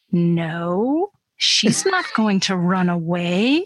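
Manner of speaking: very slow, drawn-out delivery. Retelling his answer when asked about protecting his little sister, very slowly. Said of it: "he says very slowly".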